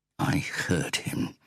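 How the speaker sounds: hissed line. Reading a novel, a man who came up behind her in the kitchen is hissing. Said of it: "he hissed".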